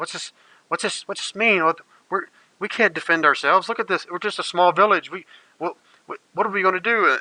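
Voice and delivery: high, scared whimpering from several voices. Voicing frightened villagers after hearing bad news: frightened whimpering villagers. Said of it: "murmurs and some people kind of letting out little whimpers".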